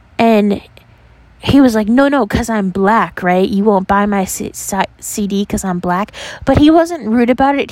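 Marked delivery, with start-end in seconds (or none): none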